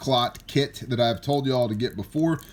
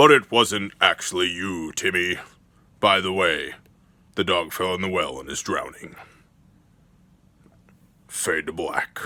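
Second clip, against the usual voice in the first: low, dramatic movie voice-over narrator voice; 6 semitones lower than usual. Describing a movie trope, the speaker does the narrator who comes on: movie narrator voice. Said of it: "the narrator voice comes on and says".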